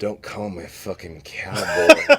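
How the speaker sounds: surly, downcast, slow and sorrowful grumble. Retelling what a man at a bar said: imitating a sorrowful surly man. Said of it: "looks up at me from his drink in sorrow".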